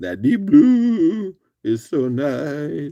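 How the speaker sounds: voice breaking, cracking, drawn-out blue. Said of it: "Sorry, my voice cracked".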